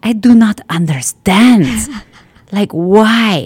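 put-on slight Polish accent. Retelling a woman's reaction to seeing them eat that way, in a Polish accent. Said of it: "with her little Polish accent".

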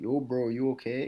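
put-on casual, bro-style Hawaiian-accented speech. Recalling a veteran fighter checking on him on the bus; Max Holloway's Hawaiian accent. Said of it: "in his Hawaiian accent".

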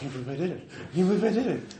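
high, dazed mumble, half-aloud. Voicing a soaked, wide-eyed survivor: mumbling to himself. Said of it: "he's mumbling to himself".

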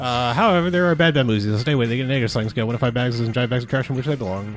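very fast rapid-fire speed-talking. Racing through the show's rating system as others say slow down, very fast talking. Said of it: "Slow down".

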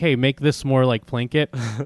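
ordinary talk

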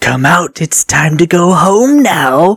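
strange, slow, drawn-out, high-pitched coaxing voice. Telling a creepypasta story, a voice calls out from a tunnel: weird voice. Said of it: "he hears this weird voice that says".

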